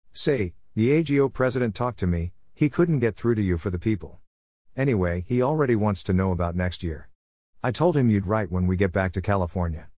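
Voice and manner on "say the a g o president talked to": ordinary delivery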